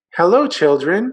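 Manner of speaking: sweet, sweetly spoken tone. Narrator reads a woman greeting the children after returning: sweet voice. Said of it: "someone said in a sweet voice".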